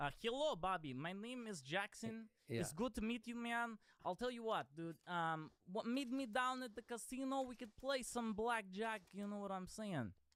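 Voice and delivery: put-on East European accent. Asked to do an accent, the speaker introduces himself in an Eastern European accent. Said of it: "let's do a East European ... Accent".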